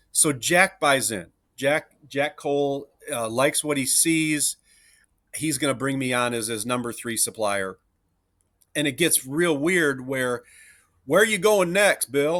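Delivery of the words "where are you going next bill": put-on Nashville Southern accent, raised and high. Retelling a client's question on a sales trip: imitating Nashville accent. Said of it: "in his Nashville accent".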